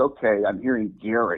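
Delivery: ordinary delivery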